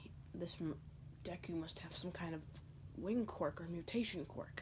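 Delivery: soft, whispered under the breath.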